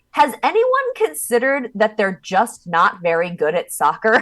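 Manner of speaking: brash, outspoken blurted remark with swooping pitch. Recounting what a woman said aloud at a soccer game, retelling a loud remark. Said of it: "She said very loud".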